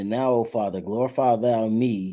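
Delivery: ordinary delivery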